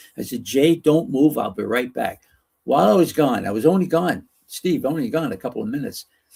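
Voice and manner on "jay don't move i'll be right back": normal talking voice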